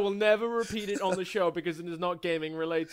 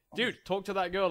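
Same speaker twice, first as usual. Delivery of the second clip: ordinary talk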